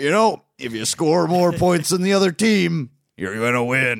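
very loud, high commentator holler, belted. Breaking down a Lions game with co-hosts, John Madden impression. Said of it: "That's my Frank Caliendo doing John Madden voice".

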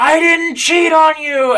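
play-acted, very high, loud screaming. Retelling a man shouting down a hill at a woman in a drive-thru: retelling a scream.

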